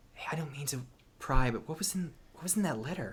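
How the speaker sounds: character whisper. A game master voices a character leaning over to a player: Sloran whispering. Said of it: "leans over and whispers to you".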